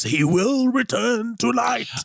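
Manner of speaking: very high, slow, unhinged voice. Retelling a film scene where Trelawney grabs him from behind, in an insane Trelawney voice. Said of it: "who's like in in this insane voice".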